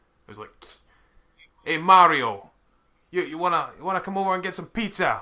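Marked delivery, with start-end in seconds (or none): 1.7-5.2 put-on loud, high, deliberately terrible New Jersey accent. Mocking the stereotyped voices, doing the Toad guy: Toad's bad New Jersey accent. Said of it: "he had like the worst the worst New Jersey accent ever".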